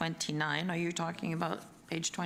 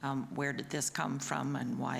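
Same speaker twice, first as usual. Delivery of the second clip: ordinary delivery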